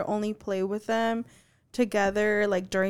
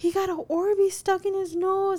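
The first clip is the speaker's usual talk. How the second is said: mock sobbing scream, very high crying wail; 10 semitones higher than usual. Retelling Arya running in right behind him; imitating Arya screaming, crying. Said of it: "like screaming, crying".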